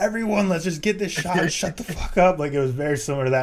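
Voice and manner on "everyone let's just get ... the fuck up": mock, high, loud, screaming-style yell. Describing a movie agent who acts like a producer: imitating someone screaming.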